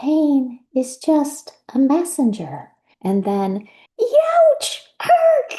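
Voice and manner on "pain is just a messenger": put-on teeny tiny, high-pitched little voice. Narrator reading a story, a small voice breaks the silence: teeny tiny voice. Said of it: "a teeny tiny voice breaks the silence".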